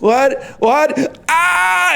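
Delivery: shrill, very high, acted-out panicky shriek. Describing a planned video, the speaker acts out their own reaction: acting out a scream. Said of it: "And I scream so loud".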